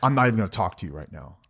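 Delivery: fast, huffing and puffing, huffy delivery. Describing how the other person reacts in an argument, imitating a huffy retort. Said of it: "you'll just huff and puff and say".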